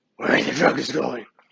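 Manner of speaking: put-on gravelly superhero voice. Trying a line for the audience in a Batman voice. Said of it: "It's the best I can do".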